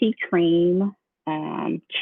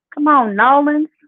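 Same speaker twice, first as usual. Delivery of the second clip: heavy put-on New Orleans accent, pitched up; 7 semitones higher, 4 dB louder than usual. Talking about loving how New Orleans people talk, thick New Orleans accent. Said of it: "They got that real that real thick accent".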